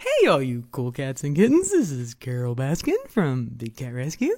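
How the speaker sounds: pitch swinging up and down throughout. Trying out an impression of Carole Baskin's greeting: Carole Baskin impression. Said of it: "I feel like I'm too low".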